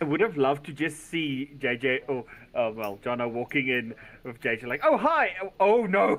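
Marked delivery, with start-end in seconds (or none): 4.8-6.2 mock surprised reaction, higher and louder. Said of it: "Just being as surprised as".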